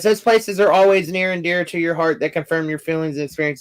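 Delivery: ordinary talk, nothing marked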